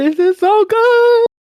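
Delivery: buzzing, very high, excited yelling outburst. Recalling first watching it with Felix, retelling excited yelling. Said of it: "I was yelling".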